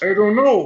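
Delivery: very high, loud, shrill shrieking demon voice. Answering with a put-on voice: Demon Kermit voice. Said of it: "That was Demon Kermit".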